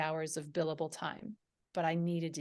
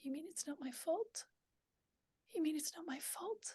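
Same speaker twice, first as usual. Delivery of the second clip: very small, soft, hushed, pitched-up voice; 11 semitones higher, 11 dB quieter than usual. Retelling what came out after falling onto the bed at home: tiny little voice. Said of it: "this tiny little voice came".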